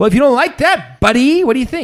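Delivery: very high angry voice. Imitating how a commentator talks when really mad: imitating angry Jordan Peterson. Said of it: "When he gets really mad".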